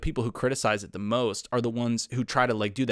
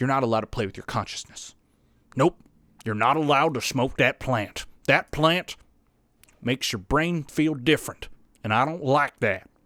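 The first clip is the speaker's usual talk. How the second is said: put-on southern-accented drawl. Voicing what the government says, in a put-on southern accent. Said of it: "I gave it a southern accent".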